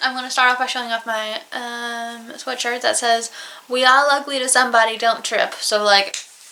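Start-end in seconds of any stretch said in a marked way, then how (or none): none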